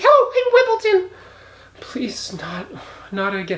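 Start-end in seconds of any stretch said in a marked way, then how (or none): 0.0-1.2 very high goofy, silly put-on character voice. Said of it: "we have a very silly".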